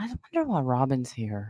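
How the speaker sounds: hushed whisper under the breath. Sharing a remark with a listener so someone else won't hear, whispering. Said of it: "I'm just gonna whisper this to you".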